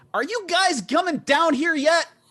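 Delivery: gnome voice, pitched very high. The narrator voices a gnome calling up from below: very high-pitched gnome voice. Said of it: "The very high pitched voice of a gnome".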